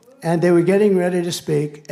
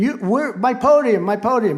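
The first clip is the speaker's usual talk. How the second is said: broken, repeating put-on scream; 7 semitones higher than usual. Retelling how a man reacted as two guys took the podium, imitating someone screaming. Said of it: "the governor was screaming".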